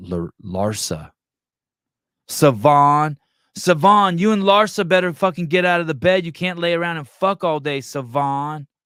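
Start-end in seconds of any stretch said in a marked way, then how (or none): 2.3-8.7 high, loud woman's voice, belted out. Yelling at Savon as a woman from Friday. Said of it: "You sound like a chick from that".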